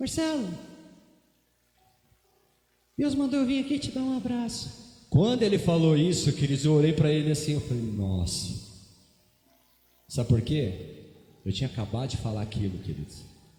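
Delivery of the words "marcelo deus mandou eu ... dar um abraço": small, thin, very high little voice. Retelling what a big man said when he arrived, in a thin little voice. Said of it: "ele tinha uma vozinha assim, tipo, mais fininha".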